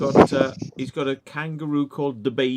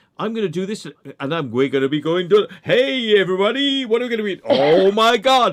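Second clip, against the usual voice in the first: high, raised rambling, each phrase broken off midway; 6 semitones higher, 6 dB louder than usual. Imitating a video maker whose clips cut off mid-sentence: imitating a YouTuber's cut-off sentences. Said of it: "he never finishes the sentences".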